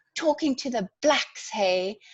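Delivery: toned-down, mild, half-voiced shouted jibe. Retelling how a man leaned out a window at them: imitating someone yelling. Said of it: "this guy leaned out and just yelled".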